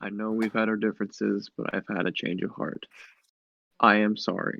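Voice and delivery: soft half-whisper, right up close. A player addresses the creature directly in the game, half-whispering. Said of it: "I'll just kind of whisper and comment to it like".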